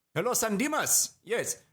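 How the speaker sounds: very high put-on Nigerian accent drifting into Indian accent. Joking about returning unwanted mail, the speaker voices the Nigerian guy in a put-on Nigerian accent. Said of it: "is this a super racist accent?".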